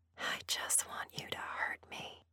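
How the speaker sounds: whispering. Dolly answers the man who asked if she will ever stop begging, whispered. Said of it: "I whispered".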